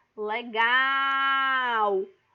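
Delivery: very loud, drawn-out calling voice. Pronunciation tip, calling 'legal' as if far away, called out loudly. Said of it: "tenta chamar legal, por exemplo, como se legal estivesse bem longe".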